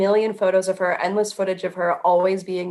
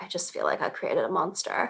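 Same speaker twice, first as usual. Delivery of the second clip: soft, breathy put-on voice; 8 dB quieter than usual. Quoting what she says about the influencer: Paris Hilton impression. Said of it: "that wasn't a really good Paris Hilton impression".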